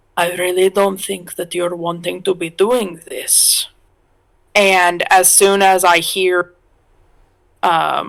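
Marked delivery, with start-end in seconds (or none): 0.2-3.7 whispering, much faster. Acting out what you'd say to someone holding a gun to your head, whispering. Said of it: "so I'll I'll whisper and say".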